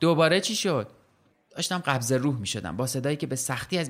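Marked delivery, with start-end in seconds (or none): 0.0-0.9 mock loud, raised shout. Narrator reading the son calling to a parent fallen in the bathroom, shouted. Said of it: "پسرم داد زد".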